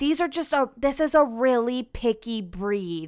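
mock-condescending, patronizing put-on tone. Quoting a woman who looked at Lola's teeth, mock-condescending tone. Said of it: "this is like the condescending tone".

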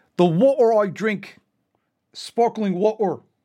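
put-on weird half-British accent, deliberate, slow and loud. Mocking the weird accent of Andrew Tate: Andrew Tate impression. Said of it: "He's always like".

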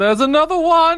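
loud, very high, carrying yell. Arlene yells back through the cave to let everyone know: yelling. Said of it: "just yells".

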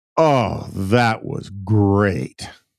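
very drawn-out, slow, sated, almost carnal contentment. Retelling a scene where Clinton ends a four-hour meeting: almost carnal satisfied Clinton voice. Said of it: "says in a sort of almost carnal kinda, "I need a cigarette" kinda way".

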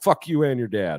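blunt, short, straight trash-talk taunt. Explaining that Nate Diaz was all action, the speaker quotes him in a Nate Diaz impression. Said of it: "you want me to quote Nate Diaz?".

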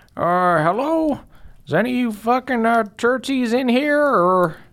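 very high-pitched character voice. Voicing a grandmother peeking into a broken church: voicing Grandmommy Joe. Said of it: "she's sort of, um, peeking in".

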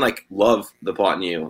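ordinary delivery

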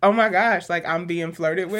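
ordinary talk

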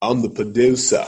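imitated Scottish accent. Retelling a music producer from Scotland: imitating a Scottish accent. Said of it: "With his little accent".

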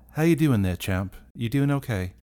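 gentle, coaxing, fatherly tone. Crouching down in front of Penelope, speaking like a father to a child. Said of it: "like a father would to like a child".

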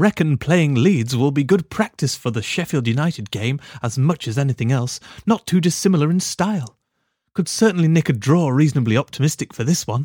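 posh, regal, upper-class English accent. Asked to do a regal accent, reading out a comment in a posh regal accent. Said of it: "We talk like the Queen".

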